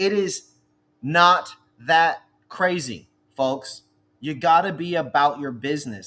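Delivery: fed-up, frustrated, exasperated delivery. Addressing an audience about reps visiting stores: frustrated tone. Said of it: "I'm using this tone because it's frustrating".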